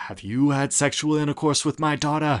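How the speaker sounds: put-on odd New England accent. Retelling a woman repeatedly questioning a man about her daughter, weird new england accent. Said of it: "New England accent".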